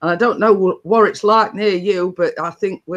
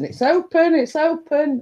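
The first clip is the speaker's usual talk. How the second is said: high, drawn-out shout; 9 semitones higher than usual. Retelling calling out to a knock at the door: retelling a shout. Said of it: "and I'm shouting".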